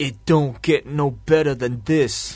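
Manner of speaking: put-on drawn-out New York accent. Discussing an actor's early promos, quoting him in a Vin Diesel New York accent. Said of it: "with like a New York accent".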